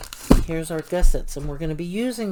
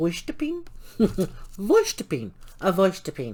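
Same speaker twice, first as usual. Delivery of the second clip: swooping, home-made put-on German accent. Telling about a daughter's car plant, the speaker pronounces its name: German accent. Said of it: "in my German accent".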